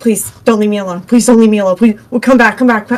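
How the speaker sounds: put-on panicked pleading tone. Retelling being left alone on a call: imitating own panicked pleading. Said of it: "you see me panicking".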